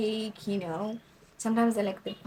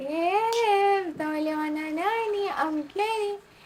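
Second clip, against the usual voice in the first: very shrill, very slow, drawn-out holler; 10 semitones higher, 6 dB louder than usual. Retelling an auntie waking the girls in each room: imitating an auntie shouting. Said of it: "And then she shouts".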